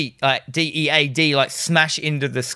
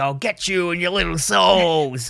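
slow, drawn-out, menacing storybook witch voice; 3 semitones higher than usual. Retelling a film scene where the villain acts like a witch: Wicked Witch of the West voice. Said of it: "Freddy comes like the Wicked Witch of the West".

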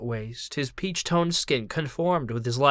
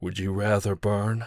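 soft, low, soft-spoken voice; 5 semitones lower than usual. Narrator reading a giant lichen's question to the man it shields, asking softly. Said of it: "the lichen asked softly".

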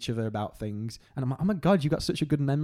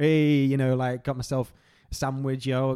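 usual speaking voice

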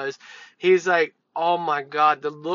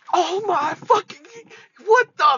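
mock-startled outburst, much higher and louder; 6 dB louder than usual. Speaker recounting being startled by someone, retelling a startled exclamation. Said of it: "it startled me".

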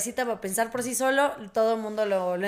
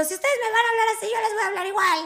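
mock shouted yelling, very high-pitched; 11 semitones higher than usual. Retelling a fight with parents, imitating own past yelling. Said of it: "les grité".

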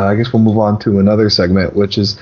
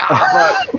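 very high, oversold cry of pain. Retelling selling a crowbar hit on a film shoot: retelling a fake pained cry. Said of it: "and I sell it".

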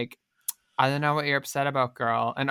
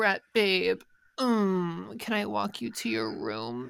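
woman's voice impression, pitched higher; 6 semitones higher, 6 dB quieter than usual. Recounting an episode, act out Daisy speaking to Brett, as a Daisy impression. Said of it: "such a good Daisy impression".

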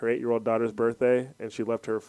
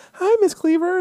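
mock sweet slick tone, higher and louder; 9 dB louder than usual. Retelling a movie scene, imitating the slick neighbor kid being sweet to adults. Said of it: "the slick one that's always like".

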